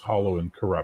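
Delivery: normal talking voice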